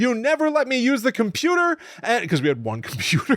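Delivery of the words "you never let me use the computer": mock furious, shrill, very high angry scream. Recounting a woman in her sixties who stood up and yelled, retelling an angry scream. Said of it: "stood up and like screamed at me".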